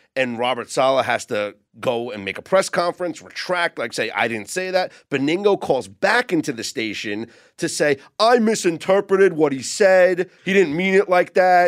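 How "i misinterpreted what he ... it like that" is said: put-on loud, high-pitched New York accent. Acting out a call back into the station: Benigno impression, New York accent. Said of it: "That's my Beningo accent".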